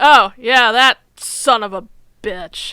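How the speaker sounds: slow, loud, drawn-out, emphatic outburst. Retelling a TV scene, imitating Gene. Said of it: "Gene's like".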